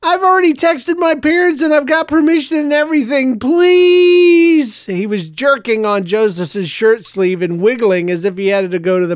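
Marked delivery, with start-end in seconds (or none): 0.0-4.8 very high begging voice, please stretched long. A boy begs another boy to let him come along, pleading. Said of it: "as he pleaded".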